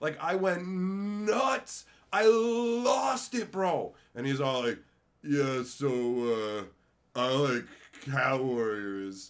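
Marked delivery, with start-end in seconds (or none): 5.2-9.3 mock deadpan, unhappy monotone, very drawn out. Mocking a presenter in the video: mocking an unhappy flat delivery. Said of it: "not allowed to seem happy".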